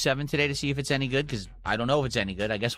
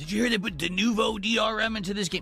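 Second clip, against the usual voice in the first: derisive, ridiculing, pitched-up mocking voice; 7 semitones higher than usual. Reading a viewer's question aloud, mocking imitation of the asker. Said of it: "Why are you mocking the guy?".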